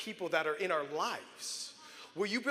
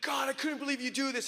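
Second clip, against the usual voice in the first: put-on scream, much higher; 6 semitones higher than usual. Recalling himself at twelve on the freeway after his brother's ambulance left, retelling a scream. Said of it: "And I'm screaming".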